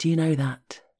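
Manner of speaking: ordinary delivery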